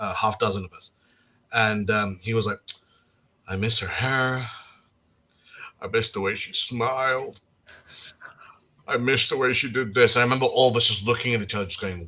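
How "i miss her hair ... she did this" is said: put-on drunk speech, slower. Retelling what a drunk housemate said to everyone, imitating a drunk guy. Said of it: "how guys get when they've drunk a lot".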